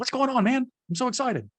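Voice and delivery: very high, hyped, cheesy salesman voice. Speaker mocks how a salesperson throws out lines, cheesy salesperson voice, octave up. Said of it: "throwing cheesy lines out with your voice up an octave".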